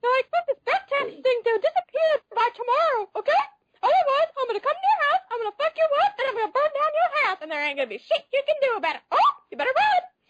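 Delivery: very high-pitched, shrill, cartoonish menacing voice. Threatening someone in character, in a really high-pitched voice. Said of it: "doing a really high-pitched voice".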